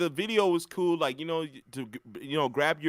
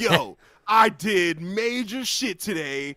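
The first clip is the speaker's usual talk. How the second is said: mock boastful bragging, higher and louder; 5 semitones higher, 5 dB louder than usual. Retelling how someone bragged as if yelling was a conquest: imitating someone bragging. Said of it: "he said it like was like some conquest".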